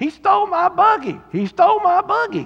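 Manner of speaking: mock high-pitched hollering. Retelling how a guy in the store was hollering: imitating a man hollering. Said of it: "I heard this guy hollering".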